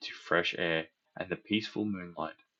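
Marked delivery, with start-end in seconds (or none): none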